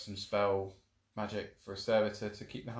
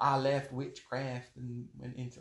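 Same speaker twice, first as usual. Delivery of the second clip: bad, slow, put-on Southern US drawl; 3 semitones higher than usual. Imitating what people say, in a put-on southern accent. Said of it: "why am I doing the southern accent?".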